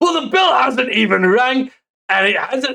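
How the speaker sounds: put-on British ringside announcer voice. Recapping a wrestling show, the speaker voices the commentator's call in a Wade Barrett accent. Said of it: "try that accent once more".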